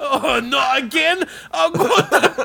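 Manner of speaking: put-on Scottish accent. Acting out a Scottish person failing a spoken test: imitating Scottish people. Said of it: "And Scottish people are like".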